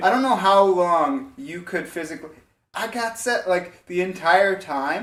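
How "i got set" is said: mock screaming, higher pitch. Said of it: "they're just screaming, like, my number in my face".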